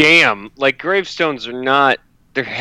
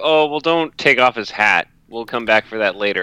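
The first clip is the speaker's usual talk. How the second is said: plain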